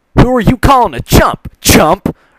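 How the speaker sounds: shrill, very high, angry, snapping retort. Narrator reading the story, Rainbow Dash answering Pinkie: angry Rainbow Dash voice. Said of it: "[name] got picked to go find Pinkie".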